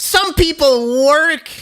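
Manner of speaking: yelling, very high pitch. Retelling what a neighbor shouted down from her window: imitating someone yelling. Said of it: "She kept yelling at me".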